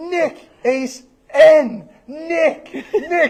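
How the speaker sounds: very slow, spelled-out, high-pitched shouting. Retelling a guy spelling a name for someone who couldn't hear, retelling a yell. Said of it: "he's just yelling at him".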